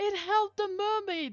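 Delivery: very high, loud sobbing.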